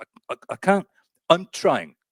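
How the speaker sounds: very high, squeaky, stuttering, strained, fairly loud voice. Retelling an impression of a strained jar opening: Michael Caine impression. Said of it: "It's like Michael Caine opening a jar".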